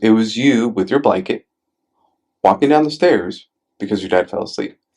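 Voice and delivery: ordinary talk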